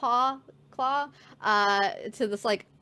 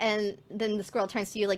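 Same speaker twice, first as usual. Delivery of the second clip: ordinary talk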